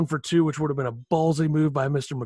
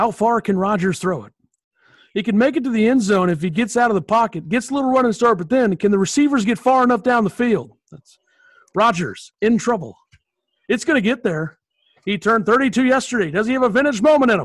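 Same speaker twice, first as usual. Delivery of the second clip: sportscaster play-by-play voice, higher and louder; 8 semitones higher, 7 dB louder than usual. Recreating a game-winning touchdown call: play-by-play sportscaster rendition. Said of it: "that's gonna be my play-by-play rendition".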